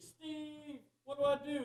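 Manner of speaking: very high, loud, drawn-out holler. Retelling a lion biting him while filming, retelling a holler at Steve. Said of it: "I hollered at Steve".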